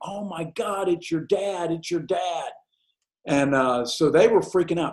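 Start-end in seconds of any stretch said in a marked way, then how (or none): 0.0-2.5 mock panicky little scream of alarm. Retelling how a girlfriend warned everyone that dad arrived: imitating a scream. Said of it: "I heard her scream".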